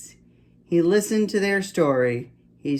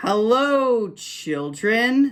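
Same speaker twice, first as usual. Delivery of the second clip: sweet and pitched up, hello drawn out; 6 semitones higher than usual. Reading a story aloud, as a woman greets the children: sweet voice. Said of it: "someone said in a sweet voice".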